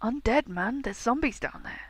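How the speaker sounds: hushed, secretive, conspiratorial half-whisper. Narrating a character who tells the group something, conspiratorial half-whisper. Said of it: "he lowers his voice and kind of whispers conspiratorially".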